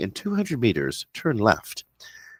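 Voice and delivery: synthetic, computerized sat-nav announcing voice. Describing a navigation product, the speaker imitates its computerized navigation voice giving a direction. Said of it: "you'll hear a nice computerized voice say".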